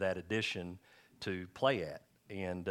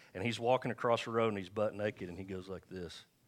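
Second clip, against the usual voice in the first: usual speaking voice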